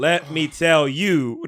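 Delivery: stilted, slow, halting word-by-word reading. Mocking how Jade Cargill cuts promos, halting word-by-word reading as Jade Cargill. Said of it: "like she's reading it with her finger under each word".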